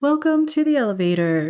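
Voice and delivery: posh announcer voice. Opening a podcast episode with an attempted bit, in a fancy elevator announcer voice. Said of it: "fancy voice things that are in fancy places".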